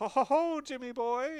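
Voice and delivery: very high, loud, slow put-on Irish accent. Describing a bully with a ridiculous haircut, in a kind of Irish accent. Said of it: "kind of Irish accent".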